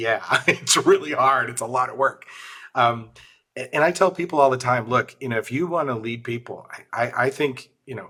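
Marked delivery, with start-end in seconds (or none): 0.0-2.2 put-on reply spoken while laughing. Retelling own reply to a newly appointed manager: retelling own reply while laughing. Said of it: "I literally started laughing".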